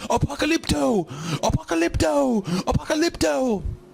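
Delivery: broken, very high put-on yell pushed way up. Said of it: "and he yells".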